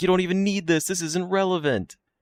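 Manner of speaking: acted very high, shrill, shrieking scream. Student imagining people who know the exam questions, imitating someone screaming. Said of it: "they're just like screaming at me".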